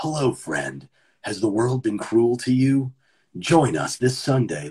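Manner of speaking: put-on voice, creepy and patronizing. Acting out a stranger from a church greeting someone: put-on creepy church recruiter. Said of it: "You're, like, from a church".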